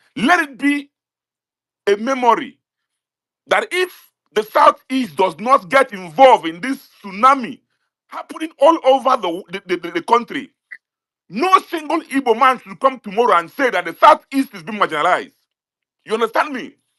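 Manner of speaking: angry. Addressing others in an online space about a protest: angry. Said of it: "I am so angry".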